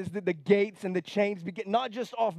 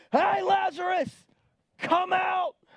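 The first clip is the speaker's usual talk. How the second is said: play-acted booming call, pitched way up, drawn out; 10 semitones higher than usual. Preacher retelling the call into Lazarus's tomb: loud call. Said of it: "the Bible says in a loud voice".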